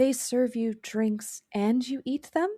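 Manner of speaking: careful, drawn-out speech. Voicing a character asking a question in character: speaking slowly. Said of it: "but speaks slowly".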